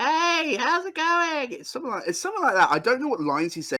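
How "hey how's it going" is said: very high-pitched, drawn-out cartoon bird voice. Trying out a Woody Woodpecker voice: Woody Woodpecker voice. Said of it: "I can give a go of Woody Woodpecker".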